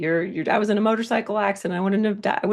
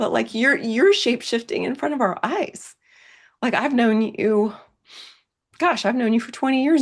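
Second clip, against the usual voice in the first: voice catching, choked up with emotion; 3 semitones higher than usual. Speaker addresses someone they have known for twenty years: emotional, choked up. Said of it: "I didn't know I was going to get emotional".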